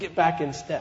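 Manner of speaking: ordinary talk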